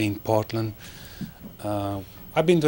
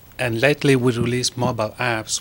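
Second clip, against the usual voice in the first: louder, raised voice. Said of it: "Daniel, could you speak up".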